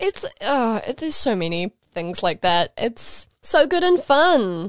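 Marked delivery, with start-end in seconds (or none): 2.8-4.7 slow, high-pitched, sarcastic delivery. Commenting on villain tropes in media: sarcastic. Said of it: "that's sarcastic".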